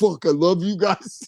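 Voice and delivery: gushing rock drummer voice. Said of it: "I think you could do a good [name]".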